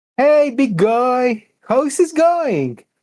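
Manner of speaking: very high-pitched, loud shout. Voicing a character drawing a creature's attention: shouting to get attention. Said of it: "I'm waiting for you to shout".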